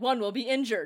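plain

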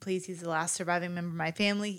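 usual speaking voice

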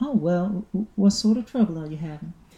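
southern fellow voice. Voicing a character in a story scene, speaking in a southern accent. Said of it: "southern fellow".

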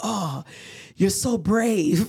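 slow, impressed, admiring tone. Retelling what people say on meeting the husband: imitating people's admiring comments. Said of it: "and people are like".

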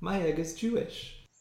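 very quiet, soft, as cute as possible little voice. Podcast host recapping a Buffy episode, quoting Willow's line; cutest Willow voice. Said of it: "says in the very cutest voice possible".

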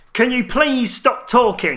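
shrill, loud, very high-pitched nerdy voice. Repeating what a man was heard saying, the speaker imitates a loud nerdy voice. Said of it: "Can you do that um, again?".

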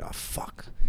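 curse under the breath.

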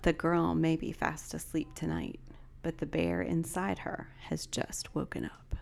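low, slow storyteller voice. Doing the line in a low voice rather than a whisper: low voice. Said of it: "I'll just do a low voice".

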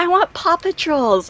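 put-on little kid voice.

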